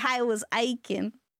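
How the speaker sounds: slow, put-on Southern accent.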